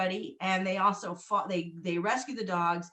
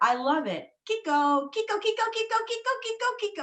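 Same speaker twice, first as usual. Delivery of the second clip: put-on squeaky, very high-pitched little girl voice. Parent retelling their nine-year-old daughter repeating the dog's name, imitating a child's high-pitched voice. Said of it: "she said it so many times in a high-pitched voice".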